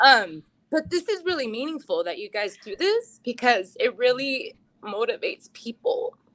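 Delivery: tearful, breaking voice, crying through words. A high school alum thanks the people who run the program: crying. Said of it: "Sorry, I'm like crying".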